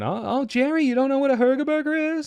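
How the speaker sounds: very high, loud, squealed sitcom-style exclamation. Acting out a made-up sitcom scene as Kramer bursts in: Kramer impression. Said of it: "Kramer comes in, he's like".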